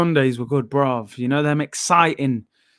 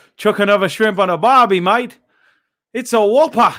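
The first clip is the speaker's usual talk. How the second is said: put-on Melbourne Australian accent, pitched up; 6 semitones higher, 3 dB louder than usual. Reading out a chat request to try accents: put-on australian accent. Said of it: "proper Melbourne accent".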